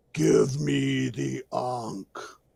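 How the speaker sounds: deep, rough, creaky, rasping voice. Game master voices something speaking through a portal, in a booming voice. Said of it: "you hear this booming voice that says".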